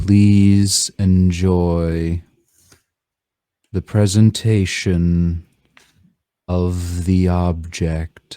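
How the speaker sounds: strange, flat, monotonous delivery. A story's character makes an announcement at a podium to an audience. strange monotonous voice. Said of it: "in a strange and monotonous voice".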